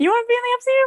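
high, loud, playful mock tone.

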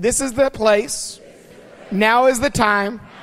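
said with a little sass and attitude. Leading the listeners in repeating a line: with a little attitude. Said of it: "Now say it with a little attitude".

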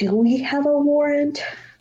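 whispered aside. Asking the rest of the group during questioning: whispering. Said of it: "I whispered to the rest of them".

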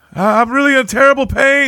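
very high, shrill yell in agony. Recalling the Austin Powers scene where Will Ferrell's character is killed, imitating Mustafa yelling. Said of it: "he's just yelling down there".

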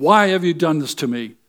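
furious, angry, accusing outcry. Acting out Job shaking his fist and asking why, acting out angry Job. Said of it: "And he's angry".

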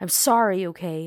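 very loud full-throated shout. Narrating a scene, he answers a girl lying in her bed, yelling. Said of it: "he yelled".

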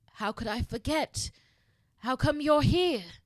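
high, hoarse, croaky little voice. Narrator reads Potter's reply to Draco, croaking. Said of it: "as he croaked".

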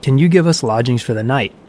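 plain reading voice

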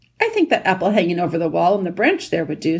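ordinary delivery

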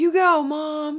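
shrill, booming, very loud, high cheerleader-style shout. Retelling a companion's shouted reply at H&M, imitating a proud cheerleader shout. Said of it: "she shouted in response like a proud cheerleader".

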